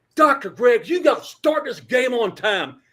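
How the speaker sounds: loud, high-pitched yelling. Retelling standing in front of the ladder before the anthem: retelling a yell. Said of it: "and I'm yelling".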